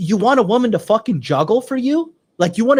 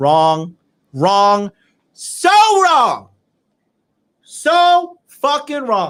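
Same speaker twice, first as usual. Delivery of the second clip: slow, heated, insistent, emphatic, flat delivery. Reacting to a video clip he disagrees with: shouting. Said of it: "Happy thinks I'm screaming at her".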